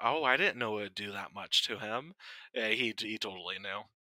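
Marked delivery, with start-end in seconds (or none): 0.0-2.1 acted feigned innocence, playing dumb. Retelling how a character excused himself: imitating someone playing dumb. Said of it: "he plays dumb about something".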